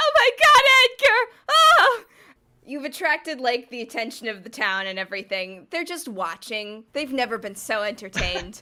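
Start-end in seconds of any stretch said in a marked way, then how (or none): 0.0-2.0 very high, drawn-out, mournful keening wail. Voicing a wife wailing in the background over her dead husband: wailing wife. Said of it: "is still wailing in the background".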